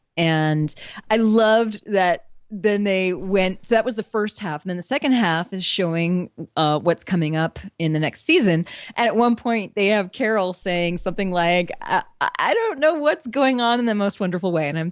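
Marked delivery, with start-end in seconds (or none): none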